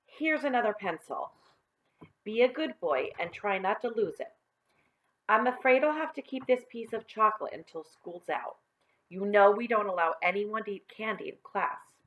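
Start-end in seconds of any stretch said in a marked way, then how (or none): none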